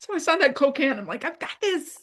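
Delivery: high, tearful voice, speaking through tears. Telling a story about a Coke can bearing the mom's name, crying while talking. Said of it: "I can't tell the story without crying".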